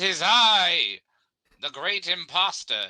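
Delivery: high, loud, shouted put-on character voice. Player answering a voice from inside a tent, yelling in character. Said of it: "I yelled at".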